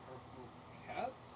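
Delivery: barely audible, muddled, confused mumble. Game narrator voices a man in the fog mumbling to the player. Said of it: "just kind of mumbles like".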